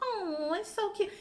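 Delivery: very high, slow, drawn-out cutesy gushing. Acting out a reaction to a picture: mock cutesy voice. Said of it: "you don't wanna use that voice".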